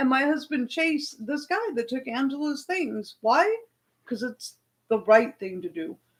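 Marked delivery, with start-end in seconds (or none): none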